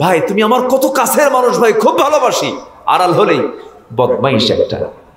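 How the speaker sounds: fake, high, gushing, flattering, two-faced tone.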